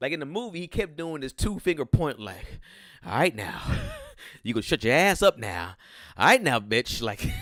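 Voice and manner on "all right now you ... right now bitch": lively, lilting animated character voice, pitch swinging up and down. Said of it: "[name]'s [name] character".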